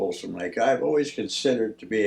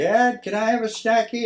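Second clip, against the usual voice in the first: very high, put-on little puppy voice; 12 semitones higher than usual. Acting out what his dog says through the door: voicing his dog. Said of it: "one voice saying".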